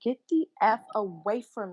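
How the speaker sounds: loud, raging, furious scream with stretched words. Recounting snapping at a man following the speaker in a bodega, retelling a scream at full volume. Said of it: "I was screaming at the top of my lungs".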